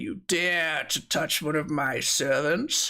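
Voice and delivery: words spoken through laughter. Narrating to players as a wound bleeds, voicing Topple in their mind: Topple's laughing voice. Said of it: "like laughing in your mind".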